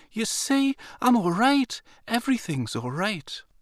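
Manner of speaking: very high, joyful, delighted voice. A woman reassuring the narrator, who is holding her; delighted. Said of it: "her voice was filled with delight".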